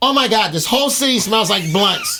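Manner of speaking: high, complaining, griping woman's voice. Retelling what a lady said about the city: imitating a complaining lady. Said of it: "She was complaining".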